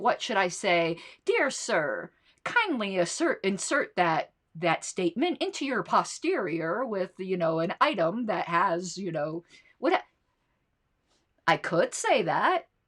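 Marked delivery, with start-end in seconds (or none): none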